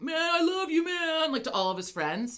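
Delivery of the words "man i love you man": spaced-out stoned drawl, very high pitch, slow. Retelling what a very high guy behind them kept saying: imitating a very high guy. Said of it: "uber high".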